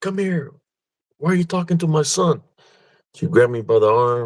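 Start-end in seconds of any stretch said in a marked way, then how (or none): 0.0-2.4 mock high-pitched, angry yell. Retelling his mom yelling at someone behind a tree, the speaker imitates her yelling. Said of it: "And she's yelling at it".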